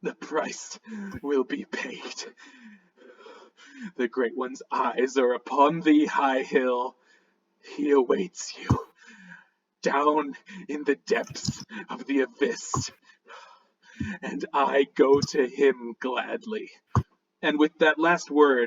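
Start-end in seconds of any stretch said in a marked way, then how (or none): 0.0-16.7 whispered voice through a gurgling throat. A storyteller voicing a dying man with a knife at his throat, gurgled, whispered voice. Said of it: "in a gurgled, gurgled, whispered voice".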